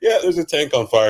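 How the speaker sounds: very high, very loud, nonchalant offhand tone. Imitating someone announcing the tank is on fire: imitating a casual remark.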